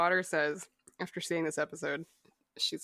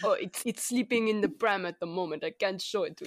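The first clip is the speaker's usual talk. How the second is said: terrible put-on German accent. Retelling how Werner answers the call, in a bad German accent as Werner. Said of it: "our terrible space German accent".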